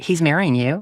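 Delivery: ordinary talk, nothing marked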